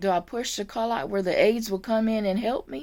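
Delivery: ordinary delivery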